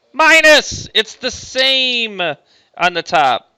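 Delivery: loud, high shouted voice. Working through a tangent formula aloud for students, yelling. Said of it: "Sorry for yelling".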